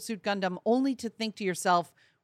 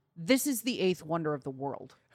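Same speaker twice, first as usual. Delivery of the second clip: mock deadpan, much lower and quieter; 5 semitones lower, 6 dB quieter than usual. Retelling what she said after watching the thing move, imitating her deadpan. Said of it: "she deadpan says".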